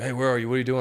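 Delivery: mock panic-stricken, panicked voice. Retelling how the manager phoned during a nap, imitating his panicked voice. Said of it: "he's like in a panic voice".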